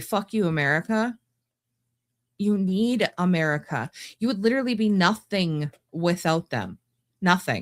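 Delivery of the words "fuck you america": normal talking voice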